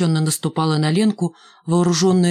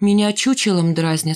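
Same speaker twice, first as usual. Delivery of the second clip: plain reading voice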